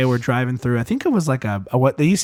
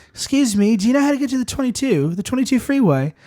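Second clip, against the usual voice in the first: put-on British accent, much higher pitched; 10 semitones higher than usual. Dad rolling down the car window to mess with people yelling, british accent. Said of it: "in his British accent".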